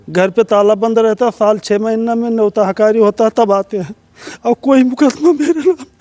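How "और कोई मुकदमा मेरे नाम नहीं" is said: crying, pitched high, tears breaking through. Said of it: "रोइए मत".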